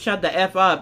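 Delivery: ordinary delivery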